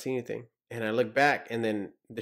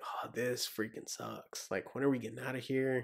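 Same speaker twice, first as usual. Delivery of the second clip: put-on whisper, quieter; 11 dB quieter than usual. Retelling what others whispered while out on training: imitating whispering. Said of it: "you can hear everybody whispering".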